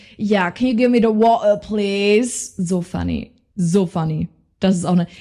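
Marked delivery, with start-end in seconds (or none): 0.2-2.5 fake, put-on British tourist accent. Recalling acting like tourists speaking English: put-on British accent. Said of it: "so diesen britischen Accent".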